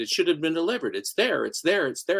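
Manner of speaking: plain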